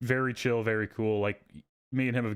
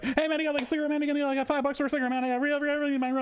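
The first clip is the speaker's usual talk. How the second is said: very high, fast, rattled-off hustling ramble. Retelling a crackhead coming at them after the subway, imitating a fast-talking crackhead. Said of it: "and immediately fast talking".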